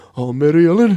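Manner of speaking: thick, put-on Irish accent. Imitating a grandfather talking to mary ellen: irish accent.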